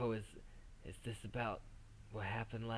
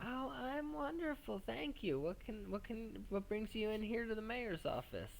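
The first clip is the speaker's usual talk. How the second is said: put-on very high-pitched, elderly grandmotherly voice; 13 semitones higher than usual. Voicing the woman at the front desk of the mayor's office, in an old lady voice. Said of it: "She's like an like an old lady, grandma".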